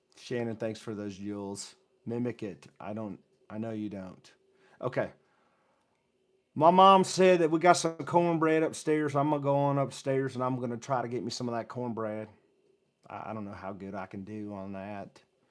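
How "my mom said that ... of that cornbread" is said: loud put-on Alabama accent, Southern style. Trying out an Alabama accent after being asked to mimic it. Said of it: "I'm trying to get an Alabama accent".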